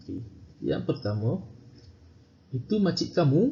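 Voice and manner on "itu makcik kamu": kamu lifted sharply high, then silence. Giving an intonation example in Malay, high pitch on kamu. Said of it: "Nampak tinggi intonasi suara. Kamu, kamu, ha, dia tinggi sekejap. Lepas tu senyap".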